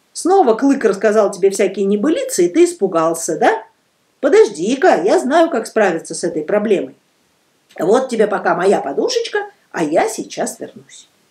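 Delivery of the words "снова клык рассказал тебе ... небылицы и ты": ordinary delivery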